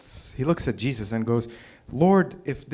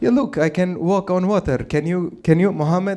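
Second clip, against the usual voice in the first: put-on Arabic accent, pitched higher; 6 semitones higher than usual.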